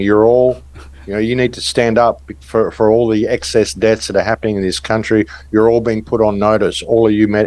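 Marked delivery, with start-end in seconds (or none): none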